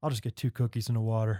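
low, utterly dejected, crestfallen voice. Retelling a man's late-night McDonald's order, imitating someone dejected. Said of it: "And he just so dejected".

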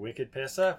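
joking put-on Boston accent. Over a foamy pour, one speaker cracks a joke in a put-on Boston accent. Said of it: "that's Boston".

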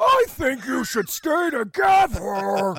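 put-on voice belted out high and very loud. Giving an example of relationship advice: imitating Blob's voice. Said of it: "Is that what you think his voice is?".

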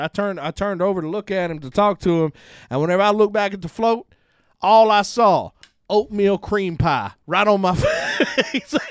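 imitated Southern accent. Retelling what a man told him, imitating a southern accent. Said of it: "he has a very southern accent".

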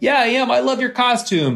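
very high, eager, excited shouted yell, acted out. Retelling how they answered the partygoer: imitating own past scream. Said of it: "I screamed back at him".

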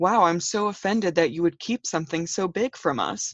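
ordinary talk

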